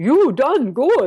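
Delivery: put-on thick German accent. Act out Hans Peter grabbing you in a big bear hug, in Hans Peter's big thick German accent. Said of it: "going in a big thick German accent".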